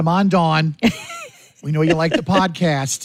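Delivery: fake, put-on East Coast accent. On a Radiothon, urging a co-host's listening mom to donate, in a put-on East Coast accent. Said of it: "I don't know why I'm doing that accent".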